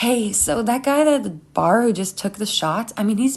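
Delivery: ordinary delivery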